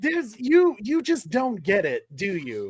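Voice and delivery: ordinary talk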